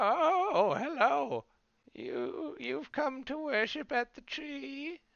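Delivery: put-on old motherly lady voice. Game master voices an old lady greeting a visitor at a tree temple, old marmy lady voice. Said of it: "you see an old marmy lady".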